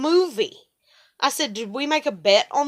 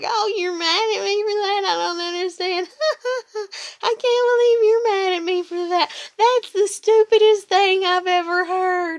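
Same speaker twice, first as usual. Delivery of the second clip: put-on incredulous reply, laughing, pitched up; 7 semitones higher than usual. Retelling her reply after hearing why he was mad: imitating someone laughing. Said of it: "she started laughing and smiling and being like".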